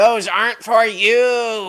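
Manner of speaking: buzz-like, buzzing voice. Game master voicing a vibrating object that speaks to Ket, buzzing voice. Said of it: "a sort of a buzzing voice".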